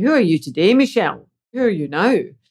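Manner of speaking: strong, very Scottish way of talking. Retelling what a middle brother always asks: imitating Derek's Scottish accent. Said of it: "they're very Scottish, and they seem to speak like this".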